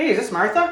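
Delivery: confident, ending on a high rising note on name. A speaker demonstrates a phone greeting, ending on a high note. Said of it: "Remember to end on that high note".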